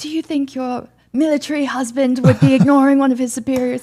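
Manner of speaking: mock full-on screaming, loud and high-pitched. Retelling how he screamed after being ignored: imitating someone screaming. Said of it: "he starts screaming".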